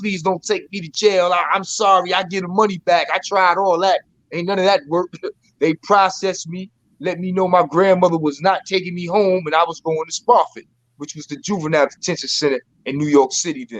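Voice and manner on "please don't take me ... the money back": mock crying, tearful begging tone. Recounting being caught at thirteen, retelling crying and begging. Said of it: "crying like a baby".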